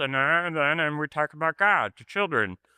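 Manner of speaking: put-on high children's puppet voice. A former middle-school puppeteer recalls voicing the older-brother puppet; Herb puppet voice. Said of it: "that was my my Herb voice".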